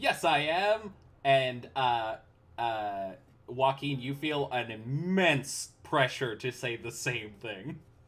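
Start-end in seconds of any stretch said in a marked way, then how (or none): 0.0-0.9 higher-pitched doll character voice. In a role-playing game, the narrator voices the doll replying: doll character voice. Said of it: "the doll says".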